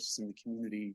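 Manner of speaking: soft, hard-to-hear speech.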